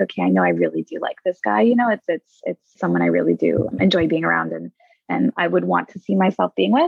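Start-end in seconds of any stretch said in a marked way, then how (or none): none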